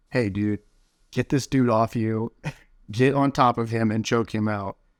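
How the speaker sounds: usual speaking voice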